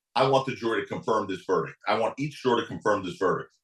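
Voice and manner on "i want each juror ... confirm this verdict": ordinary talk, nothing marked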